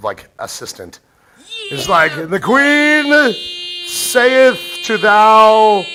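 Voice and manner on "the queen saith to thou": put-on town crier voice, higher and louder. Mocking another speaker's announcing style: put-on town crier voice. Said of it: "You would be a horrible town crier".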